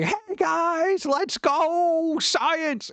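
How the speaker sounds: high scream with drawn-out "go". Joking about how teachers shouldn't act: imitating a screaming YouTuber. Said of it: "a flailing YouTuber screaming at everybody".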